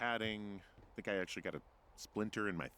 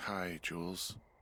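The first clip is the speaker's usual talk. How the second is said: weary, drained, tired, worn-out voice; 3 semitones lower than usual. Greeting jules after being called a big dumb idiot, in a tired voice. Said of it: "you sound tired".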